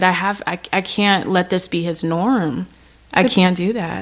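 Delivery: ordinary talk, nothing marked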